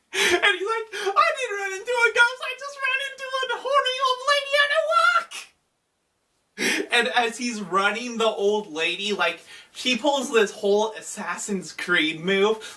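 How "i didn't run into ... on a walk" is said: play-acted frantic, panicked screaming, very high, rattled off fast. Retelling how a character ran down a tunnel, imitating Archon screaming. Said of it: "runs down the tunnel screaming".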